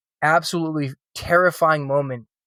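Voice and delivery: ordinary talk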